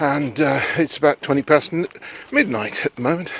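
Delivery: breathless, out-of-breath delivery. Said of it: "it's not why I'm out of breath".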